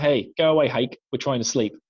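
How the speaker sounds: a shout, called out but kept contained. Recounting a night scene, the speaker quotes someone yelling at a visitor: retelling a shout. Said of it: "Rand just shouts out and goes".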